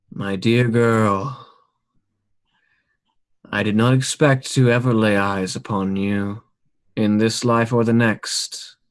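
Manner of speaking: tomblike, sepulchral ghost voice with faint echo. Telling a story, the ghost addresses a girl; sepulchral ghost voice. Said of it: "it speaks with this tone that is sepulchral".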